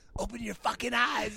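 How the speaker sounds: creaky, rough-edged voice. Retelling how a director gave orders during a scene: imitating the director. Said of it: "He'd be like".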